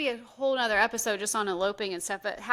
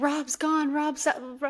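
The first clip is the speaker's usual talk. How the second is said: put-on yelling, higher; 5 semitones higher than usual. Retelling when rob escaped out the front door: imitating own past yelling.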